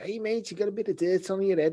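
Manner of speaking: high, silly put-on Scouse Liverpool accent. Recalling what friends used to say to each other, in a Liverpool accent. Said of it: "just taking like Liverpool accent".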